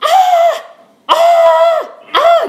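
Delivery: very high, loud yelling, repeated over and over.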